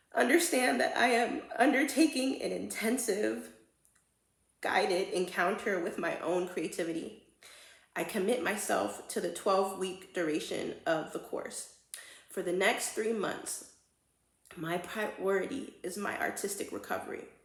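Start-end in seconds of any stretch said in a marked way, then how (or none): 0.1-11.6 choked-up voice catching on the edge of crying. Reading her own creativity contract pledge aloud to herself: choking up. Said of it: "I don't know why I'm about to cry again".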